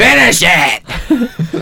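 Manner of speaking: screaming. Urging another speaker to finish a quoted line: screaming. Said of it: "I need to stop screaming into the mic".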